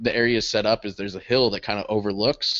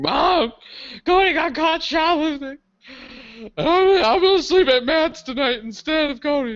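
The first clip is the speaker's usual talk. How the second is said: put-on tearful, very high bawling sobs. Retelling a phone call to his parents: imitating his own crying. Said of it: "I called my parents, bawling".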